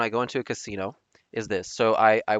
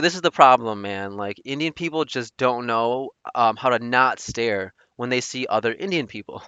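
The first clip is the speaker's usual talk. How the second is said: usual speaking voice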